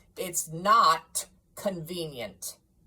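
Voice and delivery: grumbling growl. A stingy employer grudgingly answers his clerk about a day off, with a grumbling growl. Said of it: "Also that [name] had as little of what is called fancy about him as any man in the city of London, / and [name] walked out with a growl".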